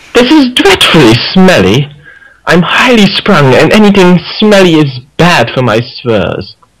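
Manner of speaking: high, sing-song lilting voice with big swoops. Reading a requested line aloud for the others: Rarity voice. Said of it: "we'll all do our best Rarity accent".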